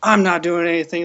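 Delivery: mock hostile, combative, aggressive tone. Retelling what an opponent at a card game said: imitating an aggressive reply. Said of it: "starts getting really, really aggressive".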